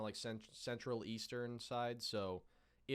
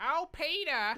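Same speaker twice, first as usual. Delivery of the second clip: put-on Boston accent, much higher pitch; 11 dB louder than usual. Talking about dating a girl from Boston, you demonstrate with a Lois Griffin accent. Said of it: "like that Lois Griffin accent".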